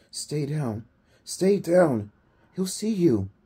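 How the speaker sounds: high-pitched, loud stage whisper. Lying among crawling worms, he warns the narrator to stay down, in a loud whisper. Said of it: "Wendell whispered loudly".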